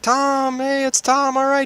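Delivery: high, loud, crowd-like cheering.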